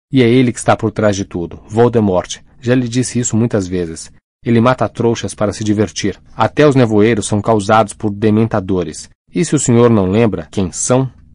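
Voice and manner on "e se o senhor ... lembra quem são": ordinary delivery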